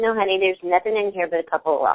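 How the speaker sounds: plain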